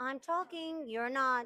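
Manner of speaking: very loud, strict teacher voice. Performing a teacher's sit-down voice when asked for it: sit-down voice. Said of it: "what's your best sit-down voice?".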